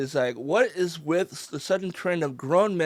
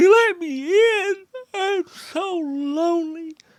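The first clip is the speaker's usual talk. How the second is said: very high, very slow voice; 14 semitones higher, 5 dB louder than usual. Telling the others about the dog at the door, voicing the dog. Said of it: "he's outside my door going".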